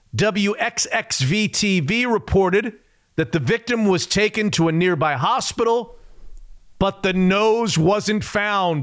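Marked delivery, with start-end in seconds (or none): none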